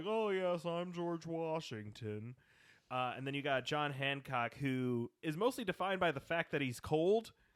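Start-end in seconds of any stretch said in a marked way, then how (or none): 0.1-2.3 high, slow, prim drawl, pitched up. Describing a show's Founding Fathers voices: waspy George Washington voice.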